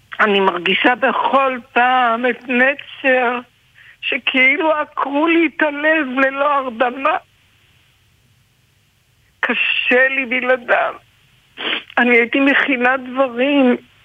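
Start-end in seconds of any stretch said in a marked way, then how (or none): 0.2-10.9 slow, tearful, crying speech. A grandmother who just apologized for crying, crying while speaking. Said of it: "סליחה שאני בוכה".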